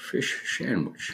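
hushed, airy, breathy whispered film-star voice. Saying the words when asked to do it like Sean Connery: Sean Connery voice. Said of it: "Maybe say it like Sean Connery".

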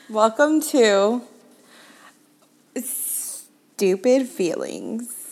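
very slow, put-on sultry, sexy purr. Opening the podcast for listeners: put-on sexy voice. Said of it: "your voice sounds so sexy".

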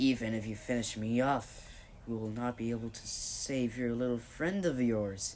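ordinary delivery

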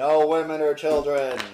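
loud, thundering, booming godlike voice. Telling the players what they hear, a voice forbids it: thundering godlike voice. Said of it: "thundering, godlike voice go".

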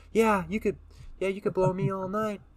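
put-on shrill yelling. Retelling what a woman said in the car during a breath test, imitating someone yelling. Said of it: "She's yelling in the car".

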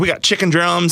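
put-on folksy Southern accent. Retelling a guest's first interview about track food: imitating Ben's southern accent. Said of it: "it was in his southern accent".

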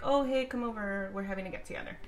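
ordinary delivery

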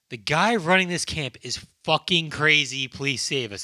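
plain

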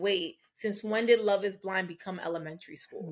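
normal talking voice

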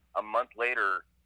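normal talking voice

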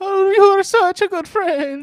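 put-on Italian accent, very high and very loud. Recapping an episode, quoting Rick's mom in an Italian accent. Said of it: "we're doing like Italian".

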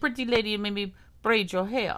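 bad, mock, put-on Bahamian accent. Recalling a Bahamas trip, the speaker quotes locals in a bad Bahamian accent. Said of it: "What was that accent?".

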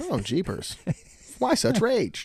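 put-on very high, sing-song, corny old-timey man's voice.

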